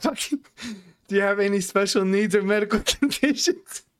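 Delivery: talking through giggles. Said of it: "you see how this man's laughing?".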